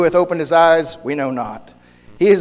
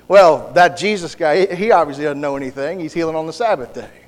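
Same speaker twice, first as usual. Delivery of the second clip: plain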